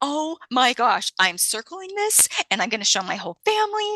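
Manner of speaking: put-on thrilled gushing, excited, high, swooping chatter. Retelling what a first-grade student said about her word: imitating an excited student. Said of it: "And she was so excited".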